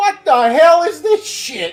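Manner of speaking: put-on gangster movie voice. Joking about a game, quoting a movie line: Joe Pesci voice. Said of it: "Joe Pesci's voice going".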